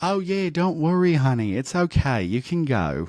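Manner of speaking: put-on flamboyant Australian accent.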